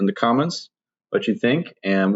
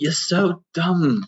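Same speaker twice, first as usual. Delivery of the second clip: put-on English accent, pitched up; 7 semitones higher than usual. Acting out someone calling Tim dumb, English accent. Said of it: "with an English accent".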